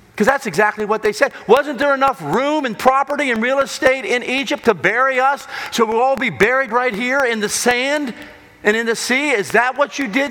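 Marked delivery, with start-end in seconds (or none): 1.5-10.3 put-on, pitched-up, accusing shouts like a crowd. Retelling the story of Moses, imitating people yelling at Moses. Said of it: "as they start yelling at Moses".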